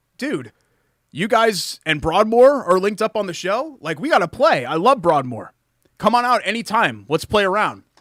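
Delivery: put-on thrilled, eager voice, high and loud. Retelling a voicemail from a lawyer: imitating Josh sounding excited. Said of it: "he's excited".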